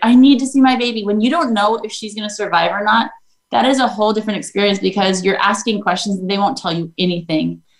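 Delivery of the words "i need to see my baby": put-on angry, mad outburst, higher and louder. Retelling being refused entry to see the child: retelling an angry demand. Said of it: "I was seriously so mad".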